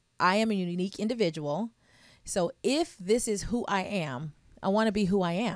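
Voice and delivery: ordinary talk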